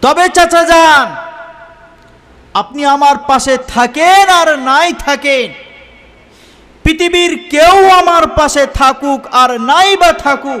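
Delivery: defiant resolute declaration.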